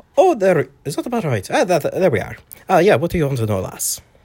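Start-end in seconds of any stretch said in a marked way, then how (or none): 1.5-4.0 put-on Irish-accented character voice, higher. Performer asked to show the character they've been working on, irish accent character voice. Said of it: "What's your accent from?".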